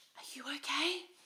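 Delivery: tiny, faint, small, soft, faraway voice. Retelling hearing a neighbor answer through the wall: imitating a faint little voice. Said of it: "so faintly, I just hear this little voice going".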